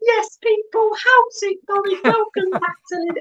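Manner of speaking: very high, squeaky cartoon voice. Recalling his old intro from the start of his channel; squeaky Mickey Mouse voice. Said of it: "I sound like Mickey Mouse".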